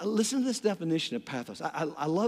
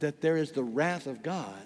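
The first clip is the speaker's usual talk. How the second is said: normal talking voice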